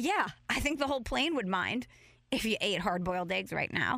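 ordinary delivery

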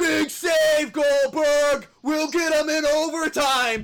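top-of-the-lungs scream, very high and loud. Retelling a hockey save, the speaker acts out Bombay screaming. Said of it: "screams at the top of his lungs".

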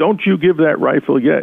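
high, mild yelling. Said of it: "he's yelling and screaming".

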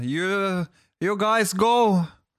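slow, high-pitched broken English.

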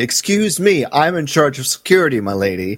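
put-on huffy tone. Acting out a character answering Padme, mock-huffy tone. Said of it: "He does get huffy".

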